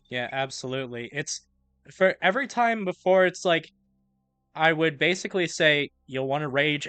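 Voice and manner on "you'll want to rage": ordinary talk, nothing marked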